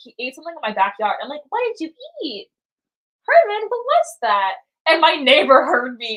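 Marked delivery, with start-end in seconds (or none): 1.5-4.6 put-on very high, swooping, sing-song baby talk. Speaker retelling how she talked to her tortoise Herman, in a little baby voice. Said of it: "talking to my tortoise in like a little baby voice".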